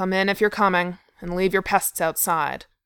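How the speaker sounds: growled words. Narrator reads a character turning his back on photographers, growling. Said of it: "Thorin growled".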